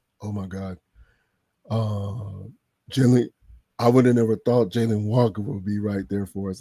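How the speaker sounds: low put-on voice, with "uh" drawn out long. Recalling watching with friends in the chat, the speaker does a Big Ant voice. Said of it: "I can hear big and Big Ant voice".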